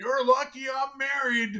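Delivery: play-acted, very high, full-throated shout. Retelling a man shouting across a crowded ballroom: imitating someone shouting. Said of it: "shouts at the top of his lungs".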